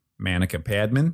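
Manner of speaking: mock Boston pronunciation. Introducing his co-host on the Armchair Expert podcast, saying her name in a Boston accent. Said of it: "That's how you'd say it in Baston".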